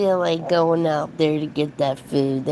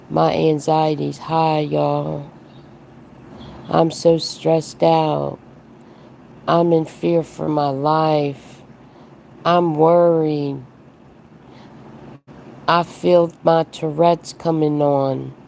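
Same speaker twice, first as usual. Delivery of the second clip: flat monotone drone that never changes in tone. Mocking a woman who says her anxiety is high, imitating a flat monotone. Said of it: "her tone it never changes".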